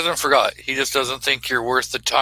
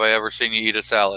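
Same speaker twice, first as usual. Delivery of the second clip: normal talking voice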